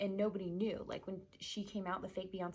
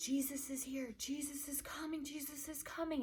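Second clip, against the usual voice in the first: acted, high, frantic, urgent, repeated shouting; 7 semitones higher than usual. Retelling arguing with a man, yelling in his face: retelling frantic yelling. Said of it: "I'm frantically like".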